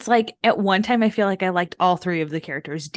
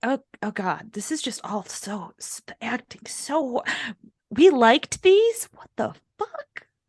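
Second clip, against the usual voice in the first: high, slow, appalled disbelief. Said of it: "And I was like".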